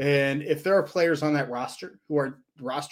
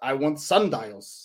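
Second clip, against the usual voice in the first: put-on German accent. Retelling a story of Albert Einstein at a backyard store, Albert Einstein German accent. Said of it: "he says in his German accent".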